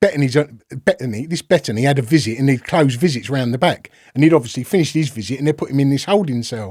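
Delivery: plain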